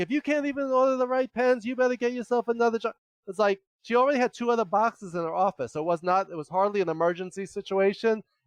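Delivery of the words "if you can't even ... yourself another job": put-on high, raging scream, losing control. Retelling how she threw pens and screamed at the speaker, imitating her screaming. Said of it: "started screaming at me".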